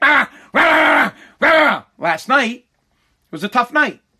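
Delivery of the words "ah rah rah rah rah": high, loud yapping dog bark. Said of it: "he's like".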